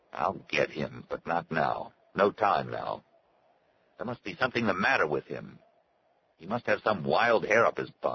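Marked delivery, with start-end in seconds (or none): none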